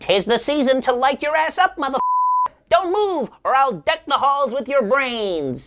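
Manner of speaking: sing-song, put-on storybook elf voice, threatening. Describing an armed robber in an elf costume who keeps up his act, elf voice. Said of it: "he still has to do the elf voice".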